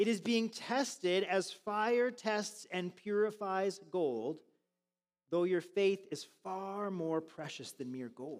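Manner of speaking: unhurried, meditative delivery with pauses. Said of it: "read it a little bit slower and a little bit more meditatively".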